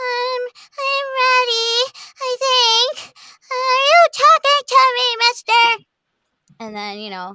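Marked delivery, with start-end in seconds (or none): 0.0-5.9 put-on tiny childlike voice, very high, very slow. Retelling his turn doing the famous movie line, in a little kid voice. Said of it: "I did like a little kid".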